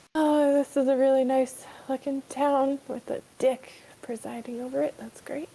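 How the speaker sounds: muttering under breath. Playing a character who comments on a town so Trim won't hear: muttering under breath. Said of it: "I say under my breath so Trim doesn't hear".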